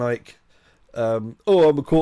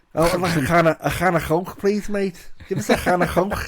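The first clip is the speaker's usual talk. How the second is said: put-on Liverpool accent, much higher pitch; 6 semitones higher than usual. Trying out different accents when asked, doing a Liverpool accent. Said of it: "How about Liverpudlian?".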